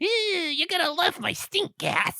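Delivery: squeaky, very high-pitched, goofy voice. Retelling a movie, imitating how the goofy chemist always talks: imitating the goofy chemist's voice. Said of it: "he always talks like this".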